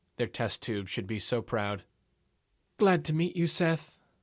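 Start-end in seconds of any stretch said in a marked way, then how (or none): 2.8-4.0 sultry, husky, seductive voice, pitched high. Chloe greets seth on meeting him, husky and seductive. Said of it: "her voice husky and full of sex".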